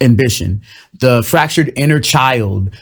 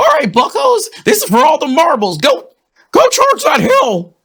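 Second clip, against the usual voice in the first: very high, swooping frog-puppet drill sergeant voice. Speaker imagines Jordan Peterson as a sergeant, in a Jordan Peterson impression. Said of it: "if Jordan Peterson was like a sergeant, he's like".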